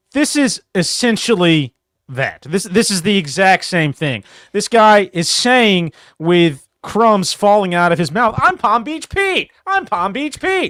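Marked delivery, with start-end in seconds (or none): 8.4-10.7 very high, corny, cheesy self-caricature voice. Quoting a guy who talks like a caricature of himself, Palm Beach Pete impression. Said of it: "In the most cheesy".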